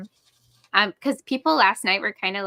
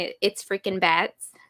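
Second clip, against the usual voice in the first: normal talking voice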